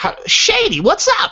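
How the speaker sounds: very high, squeaky, helium-like cartoony voice. A performer shows how they delivered a character's lines, in a cartoony voice. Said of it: "it was it was in a very cartoony way anyway".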